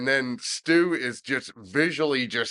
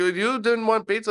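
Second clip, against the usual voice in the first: fake Indian accent, much higher; 9 semitones higher than usual. Retelling how a man got on the phone, in a put-on indian accent. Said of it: "Parsi or Indian accent".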